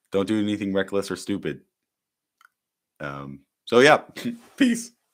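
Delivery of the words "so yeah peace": voice cracks mid-word on "peace". Signing off the channel for the night to everyone, voice cracking. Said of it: "that voice crack".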